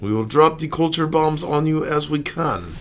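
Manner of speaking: put-on Russian accent. Taking up a suggestion to pretend to be Russian, in a fake Russian accent. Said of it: "Should we pretend to be Russian?".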